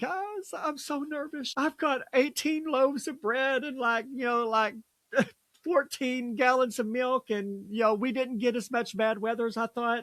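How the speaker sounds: high, weepy, tearful crying voice. Retelling a TikTok video of a lady who was crying: imitating someone crying. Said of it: "but she was crying".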